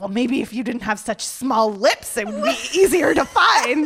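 really angry voice. Retelling replying to a man who called the speaker a terrible kisser: retelling an angry retort. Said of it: "was really angry".

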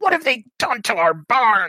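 furious, very high-pitched, loud angry yell. Narrator voicing a figure shouting from the yard by a burning barn, shouting voice. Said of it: "you hear that same voice shouting".

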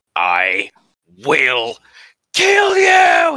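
very loud, very slow, raging furious scream. A player's character, nearly frozen, screams at a foe; furious scream. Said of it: "screaming at this guy furiously".

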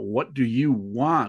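acted shouting. Recounting how a frightened woman finally shouted out, retelling a shout. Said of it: "she shouted out".

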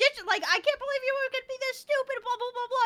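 acted, very high, shrill, exasperated, frustrated screaming rant. Retelling a frustrated character's outburst in a fight: imitating a frustrated scream. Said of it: "she's all frustrated and screaming".

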